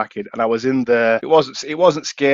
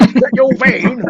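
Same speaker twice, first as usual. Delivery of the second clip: put-on London accent, high, loud, drawn out; 12 semitones higher, 5 dB louder than usual. Retelling what a man and his son asked about the van: imitating a London accent. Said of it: "Proper Londoners".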